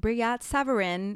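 said the American way, loudly. Pronouncing the name Brillat Savarin like an American: American accent. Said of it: "I'll pronounce it like an American".

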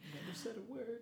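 airy, breathy delivery. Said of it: "specifically the breathy".

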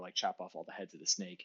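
ordinary talk

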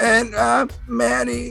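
very high, rough, creaky put-on voice. Introducing oneself at the podcast's opening, imitating Manny. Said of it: "I didn't know you were gonna do an imitation".

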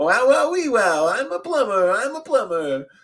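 very high, loud, belted-out comic voice. Imagining a different actor in the role, saying the line as Borat voice as Mario. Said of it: "Sacha Baron Cohen playing Borat".

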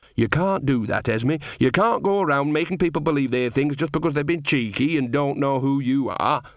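plain

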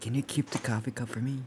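quiet whisper in a character voice. Playing a character, whispering a request to Gellert: whispering in character. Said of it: "I whisper back to Gellert".

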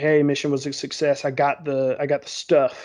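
normal talking voice

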